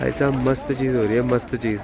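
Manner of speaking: hushed, soft, low voice.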